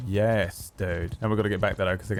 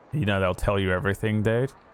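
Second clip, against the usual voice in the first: ordinary delivery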